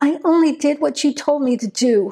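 trembling, unsteady, shaky voice. A woman defends herself to a suspicious man; voice shaking. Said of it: "her voice shaking".

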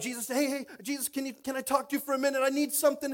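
put-on, high, urgent shouting, calling out. Retelling a story, the speaker acts out the crowd calling to the teacher, imitating a crowd shouting. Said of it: "are shouting".

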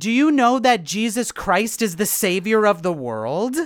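mock deliberate, slow, very loud shout. Retelling a participant addressing two people in a hot tub: imitating someone shouting very loudly. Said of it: "She starts shouting very loudly at them".

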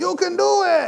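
put-on high, rough Cajun-accented cheering shout. Describing the fan in the crowd in The Waterboy cheering: Cajun guy from The Waterboy. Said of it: "There's always the Cajun guy".

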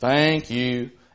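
mechanical, very low, soft robotic monotone. Describing a child prompted by parents, imitating a robotic child. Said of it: "The child very kind of robotically stops what they're doing and says".

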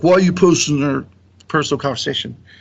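mock heated, indignant, fast and mad. Speaker retells a man reacting to screenshots posted under his post, mock-angry. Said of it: "he got real mad and was like".

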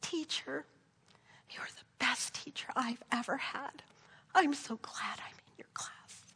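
put-on small, soft, breathy whispered little child's voice. Retelling another child's words from across the classroom: imitating a child's little voice. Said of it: "And another little voice".

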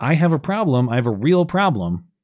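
plain

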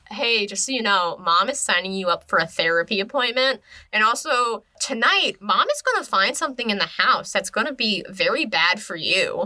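normal talking voice

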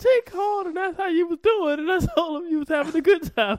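very high, loud voice. Retelling what your sister said when you got home, impersonating a sister's voice. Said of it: "your sister's voice".

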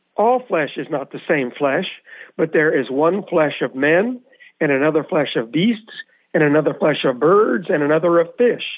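plain

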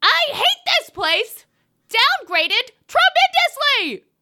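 put-on enraged yelling. Reading a one-star review aloud in an impression of the co-host: put-on enraged yelling. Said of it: "I'm sorry I yelled so much".

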